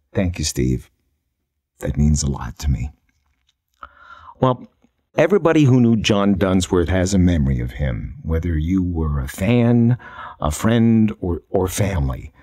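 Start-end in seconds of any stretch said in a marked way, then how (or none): 0.2-2.9 gentlest, soft, most unguarded, vulnerable voice. Retelling a friend's quiet thanks after a compliment about family: imitating John Dunsworth's soft, vulnerable voice. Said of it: "most completely vulnerable voice I've ever heard".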